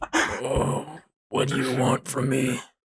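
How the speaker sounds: pained, anguished voice aching with hurt. Voicing Bubba in a role-play scene, speak in Bubba's pained voice. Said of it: "That's his pained voice".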